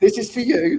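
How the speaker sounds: forceful, emphatic delivery. Retelling how dad handed over a gift: imitating dad saying it forcefully. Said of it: "really, like, forcefully".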